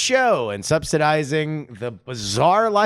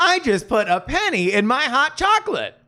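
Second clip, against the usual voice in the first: very high, synthetic text-to-speech narrator voice; 10 semitones higher than usual. Joking about a website name, trying the TikTok text-to-speech voice. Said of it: "I can't do an impression of the TikTok voice".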